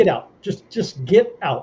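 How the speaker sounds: acted upset outburst. Retelling how the driver pulled over, the speaker is imitating someone upset. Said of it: "she got really upset with me".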